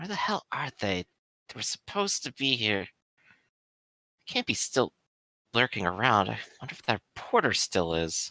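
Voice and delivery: soft, low mumbling. Narrating a scene, the speaker voices Osborne mumbling to herself. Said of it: "she's mumbling to herself".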